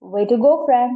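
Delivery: ordinary delivery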